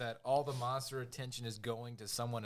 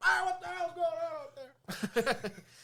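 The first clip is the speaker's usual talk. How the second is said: very high, slow, drawn-out faraway holler, acted out; 4 dB louder than usual. Retelling a movie scene where a character yells from afar: imitating McDougal yelling. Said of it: "McDouchel yells off in the distance".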